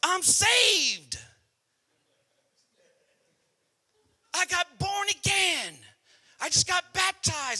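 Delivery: very high, very loud, drawn-out swooping shout. Retelling a man walking in through the door; retelling a yell. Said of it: "And he yells".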